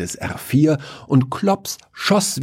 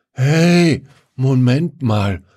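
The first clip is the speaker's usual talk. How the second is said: put-on slurred, stoned, much slower and higher; 4 semitones higher, 4 dB louder than usual. Narrator voices one of three stoned people staring at the stars, slurred and stoned. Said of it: "lallte Wiesel".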